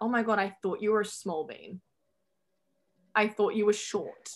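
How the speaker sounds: ordinary delivery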